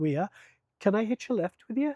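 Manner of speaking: terrible put-on Northern Irish accent, pitched high. Retelling someone asking to hitch a lift, terrible Northern Irish accent. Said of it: "that's a terrible Northern Irish accent".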